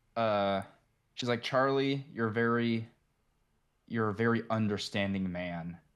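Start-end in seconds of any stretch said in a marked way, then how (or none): 1.4-5.8 patronizing, condescending, talking-down tone. Retelling a wedding speech from a movie: imitating Alana's condescending tone. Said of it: "her tone of voice is so condescending".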